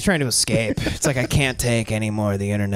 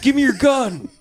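shrill, very high, barked yell; 4 dB louder than usual. Retelling how Dan Bilzerian yells at a cop: imitating Dan Bilzerian yelling. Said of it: "And then he yells at a cop".

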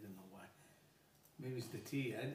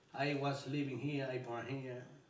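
plain

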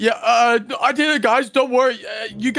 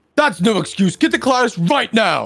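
angrily scolding voice. Playing the teacher in a roleplay, telling the late students off, angry teacher scolding. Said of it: "That guy is so angry".

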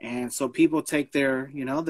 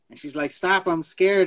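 ordinary delivery

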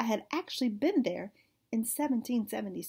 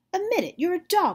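loud, high-pitched, bossy voice; 8 semitones higher, 7 dB louder than usual. Holding the narrator in a headlock, Penny gives an order, commanding. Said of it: "she commanded".

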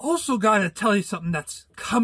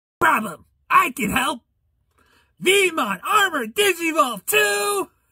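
high, pitched-up cartoon sidekick creature voice; 8 semitones higher than usual. Voicing a cartoon character announcing it can help: Veemon voice. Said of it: "Veemon from Digimon!".

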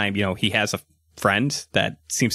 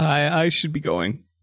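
put-on lightly drunken, tipsy, a little high-pitched; 6 semitones higher than usual. Voicing Grandpa checking in before leaving: acting a little drunk. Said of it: "some of his drunken words".

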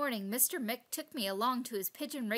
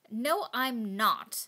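cross, raised voice, sharp retort; 5 dB louder than usual. Narrator reads their reply to a cheeky starling flying by, crossly. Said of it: "I said crossly".

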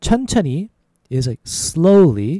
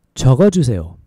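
a little faster, louder; 3 semitones lower, 3 dB louder than usual. Repeating a korean phrase for learners, a little faster. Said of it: "So a little faster".

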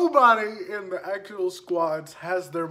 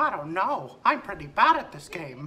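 put-on cartoon mouse voice. Playing Fortnite in voice chat, talking to another player in a Mickey Mouse voice. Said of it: "Hi everybody. It's me, [name]".

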